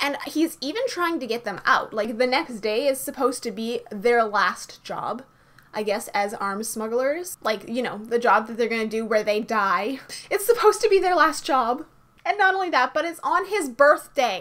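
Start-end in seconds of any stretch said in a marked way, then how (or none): 10.3-14.4 full-on loud, high-pitched yelling outburst. Speaker recounting a story's plot about a character's friends, yelling. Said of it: "I'm sorry, I'm yelling".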